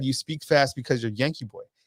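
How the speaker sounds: ordinary talk, nothing marked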